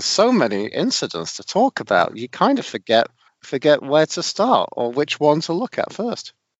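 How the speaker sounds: heavy sarcasm, swooping and drawn out. Interrupting to joke about a game with few incidents: sarcastic. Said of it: "I was being sarcastic".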